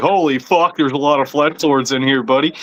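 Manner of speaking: ordinary talk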